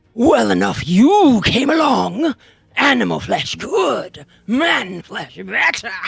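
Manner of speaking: unnatural, harsh grating voice. A game master voicing a menacing half-elf as it approaches, in an unnatural grating voice. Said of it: "He speaks in an unnatural and grating voice".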